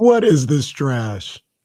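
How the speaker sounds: mock flat deadpan tone. Retelling a TV clip, reacting to a celebrating team: imitating Kobe's deadpan reaction. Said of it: "he is just deadpan".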